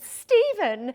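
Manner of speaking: thrilled, eager, bright, high and loud outburst. Giving a requested sample of the Pearl voice: Pearl voice, very excited. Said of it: "very excited".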